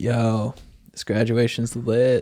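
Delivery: put-on very slow, too-cool stoner drawl. Retelling what a classmate said at a graduation: imitating a stoner classmate. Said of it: "the biggest stoner of the class, just thought he was so cool".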